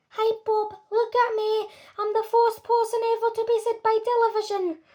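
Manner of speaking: tiny, squeaky, very high mouse-like voice. Mike Teavee speaks from inside the television to his mum: tiny squeaky Mike Teavee voice. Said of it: "A tiny little voice, no louder than the squeaking of a mouse".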